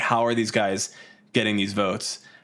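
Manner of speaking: normal talking voice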